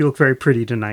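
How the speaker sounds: sly throwaway aside. Retelling how a coworker flirted with customers: imitating muttering under his breath. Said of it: "under his breath".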